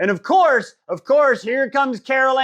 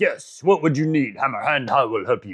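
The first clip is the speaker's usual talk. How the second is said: very deep put-on voice, laid on thick; 8 semitones lower than usual. Retelling a game scene, Helka answering Scylla in a very deep Helka voice. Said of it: "it's a very deep voice for Helka".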